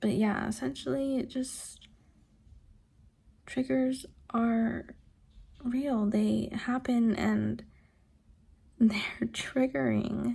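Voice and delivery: voice holding back tears. Talking to the camera about being triggered, holding back tears. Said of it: "trying not to cry".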